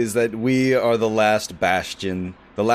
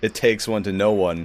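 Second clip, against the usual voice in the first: ordinary delivery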